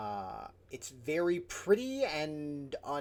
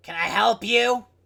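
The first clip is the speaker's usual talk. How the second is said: put-on old halfling woman voice, higher and louder; 8 semitones higher, 16 dB louder than usual. Voicing a grandma-like halfling lady greeting the players: voicing a grandma-like halfling lady. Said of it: "she just looks at you and goes".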